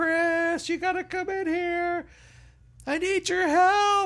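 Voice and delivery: mock very high, urgent, drawn-out scream. Retelling his wife calling him in to help, imitating his wife screaming. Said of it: "start screaming".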